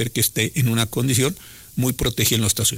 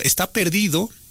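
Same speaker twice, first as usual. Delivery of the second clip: slightly ironic tone, pitched up; 7 semitones higher than usual. The speaker makes his second point, slightly ironic. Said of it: "y lo digo un poco con ironía".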